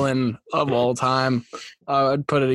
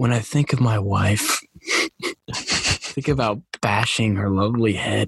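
soothing, calm, lulling narrator voice; 3 semitones lower than usual. Quoting a film's opening monologue: soothing Ben Affleck voice. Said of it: "In a soothing Affleck voice".

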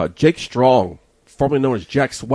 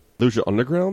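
ordinary talk

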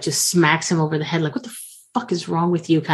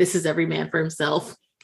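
ordinary talk, nothing marked

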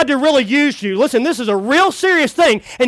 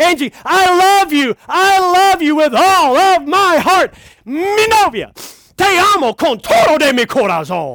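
loud, higher, much slower delivery; 4 semitones higher than usual. Coming over to Angie and declaring his love, said real loud. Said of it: "I say it real loud".

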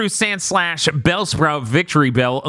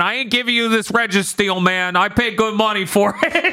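put-on Wisconsin accent; 4 semitones higher than usual. Reviewing a Pokemon movie, the speaker acts out a trainer in a Wisconsin accent. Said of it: "a Pokemon trainer with a Wisconsin accent".

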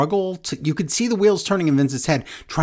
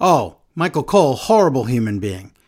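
acted tongue-in-cheek sarcastic jab, clearly joking; 3 semitones lower than usual. Retelling a joking remark by Vince, imitating Vince, sarcastic and joking. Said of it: "Vince sarcastically and very jokingly said".

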